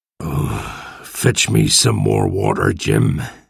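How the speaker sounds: very low, very slow, creaky groan. Hans asks Jim to fetch him water, groaning. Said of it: "he groaned".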